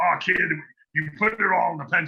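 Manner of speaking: put-on loose, tossed-off, rough old-school pro voice. Retelling a phone call thanking John Severin for inking, in a loose John Severin impression. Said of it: "This old school guy saying".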